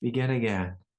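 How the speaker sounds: tender, kind, gentle and sweet soothing tone. Showing a personal practice of saying two words, soft and sweet. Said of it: "I say it with a softness, a sweetness".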